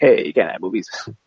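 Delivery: ordinary delivery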